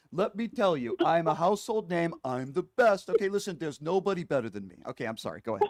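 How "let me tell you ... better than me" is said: loud, big, swaggering, boastful gangster tough-guy bragging. Boasting that nobody is better in a Tony Soprano-Donald Trump voice. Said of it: "a mixture of Tony Soprano and Donald Trump".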